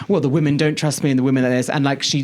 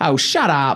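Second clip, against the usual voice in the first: put-on British-flavoured delivery. Retelling what she said to the Americans, imitating a British way of saying it. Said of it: "in, like, a British way".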